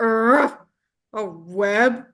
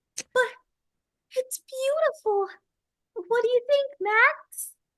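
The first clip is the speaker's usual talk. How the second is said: put-on very high-pitched girl character voice; 4 dB quieter than usual. Reading a line for the girl character when asked: girl character voice. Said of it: "In the character voice?".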